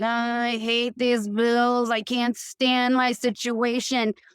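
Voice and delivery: slow, resentful, weighed-down, fed-up grumbling. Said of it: "low frequency of like".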